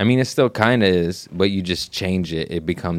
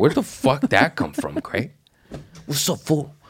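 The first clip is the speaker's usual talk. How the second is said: sudden put-on Mexican accent, swooping and pitched up; 8 semitones higher than usual. Retelling how he picks up accents, speaking in a sudden mexican accent. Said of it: "all of a sudden I have a Mexican accent".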